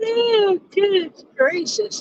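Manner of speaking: words squeezed through a very high, stretched-out yawn. Speaker says they slept well but can't stop yawning, yawning. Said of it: "I don't know why I'm yawning".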